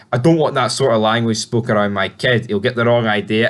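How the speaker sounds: ordinary delivery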